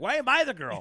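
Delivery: acted-out indignant outburst, very high, very loud, shrill. Retelling a friend's reaction to an AI video: imitating someone pissed off.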